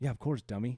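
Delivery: mock condescending, patronizing tone. Retelling how the co-host answered about the pick tally: imitating a condescending tone. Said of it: "you came out like".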